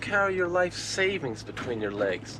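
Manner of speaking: high, soft, mocking, teasing voice.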